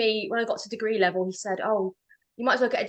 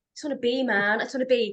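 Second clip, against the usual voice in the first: put-on hippie voice. Speaker jokes about sounding like a hippie, then does a hippie voice. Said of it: "I sound like a hippie now".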